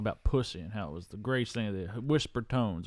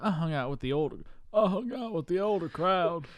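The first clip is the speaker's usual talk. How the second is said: put-on Southern accent at higher pitch; 7 semitones higher than usual. Retelling a man's childhood story about the older crowd, in Bill Clinton Southern voice. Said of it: "Why are you doing that voice, [name]? he's kind of doing the Bill Clinton voice from Primary Colors".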